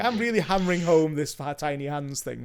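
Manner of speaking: ordinary delivery, nothing marked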